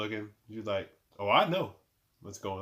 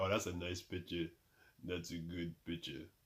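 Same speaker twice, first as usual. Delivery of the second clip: badly done, horrible put-on Russian accent; 4 semitones lower, 9 dB quieter than usual. Retelling what a man said about a picture, in a horrible russian accent. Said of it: "That was a horrible Russian accent".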